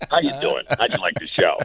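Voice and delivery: over-the-top, exaggerated cartoon clown voice. Recalling meeting a performer after his show, the speaker imitates his Krusty the Clown voice. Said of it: "It was like Krusty the Clown".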